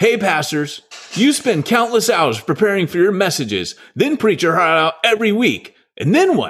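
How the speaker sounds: radio-ad commercial announcer voice, pitched high. Performing a product's first-ever commercial for an audience: real commercial announcer voice. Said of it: "I'm going to do it like a real commercial".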